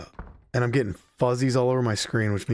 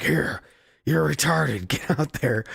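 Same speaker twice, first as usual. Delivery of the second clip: rough, creaky, rasping, blunt voice; 4 semitones higher than usual. Retelling how a wrestler got his gimmick: imitating Vince McMahon. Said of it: "and he's like".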